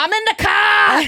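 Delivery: put-on Rhode Island accent. Imitating Real Housewives of Rhode Island cast members: imitating a Rhode Island accent. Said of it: "New York and Boston. You get Rhode Island".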